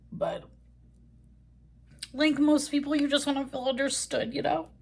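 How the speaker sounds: on the verge of crying. Talking to viewers in a video, tearful. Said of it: "I'm not crying in this video about".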